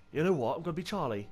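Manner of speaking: incredibly bad put-on British accent. British gamer picking a character from the loadout menu, incredibly bad British accent. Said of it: "That was my incredibly bad British accent".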